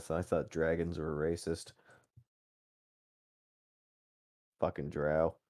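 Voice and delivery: soft, muttered mumble under the breath. In a tabletop scene, Buford reacts after the guards pass: Buford mumbling under his breath. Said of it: "you hear him mumble under his breath".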